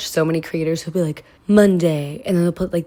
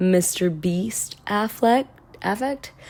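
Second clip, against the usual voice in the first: plain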